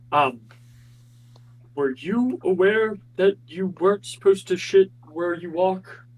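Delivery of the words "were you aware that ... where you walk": stage whisper, loud. Leaning close over the bar to a character: loud whisper. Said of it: "whisper to him so not everyone else hears".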